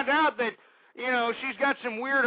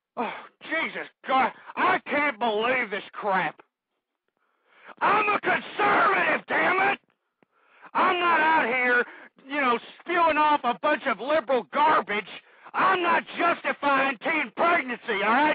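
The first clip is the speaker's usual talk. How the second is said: furious angry ranting; 3 semitones higher than usual. Ranting before stopping to calm down and apologize: angry rant. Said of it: "Excuse my previous rant there".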